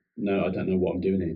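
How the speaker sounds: normal talking voice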